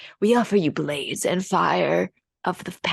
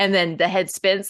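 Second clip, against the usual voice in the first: ordinary delivery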